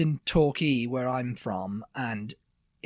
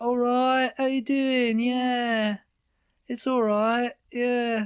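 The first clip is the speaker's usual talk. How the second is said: very high, slow chattering voice, stretched "yeah"; 11 semitones higher, 3 dB louder than usual. Imitating how a sister greets people: imitating sister's voice. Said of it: "my sister's just like".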